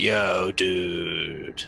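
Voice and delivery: put-on laid-back stoner drawl, dude drawn out. Making an out-of-character observation about how someone sounds, doing an American-film stoner dude impression. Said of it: "sounds like a stoner from an American film".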